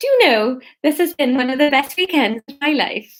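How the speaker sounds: half-remembered put-on Welsh accent, uncertain. Repeating what a woman said, failed attempt at an accent. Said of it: "Is that Welsh?".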